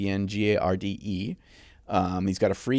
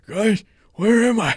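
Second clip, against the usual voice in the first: deliberately bad, squeaky and loud voice; 13 semitones higher, 8 dB louder than usual. Joking with a friend about a bad impersonation of the president, bad Joe Biden impression. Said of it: "that was like a bad impersonation".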